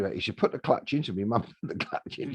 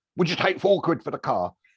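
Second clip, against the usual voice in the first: bright, raised, car salesman voice; 6 semitones higher, 5 dB louder than usual. Retelling knocking on a door to buy a car, in a put-on salesman voice. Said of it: "in my best salesman, car dealer's voice".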